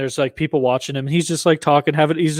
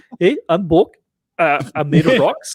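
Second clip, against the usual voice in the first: put-on New Zealand accent; 2 semitones higher than usual. Imitating a movie character played by a new zealand director: imitating a new zealand accent. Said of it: "just the way they sound".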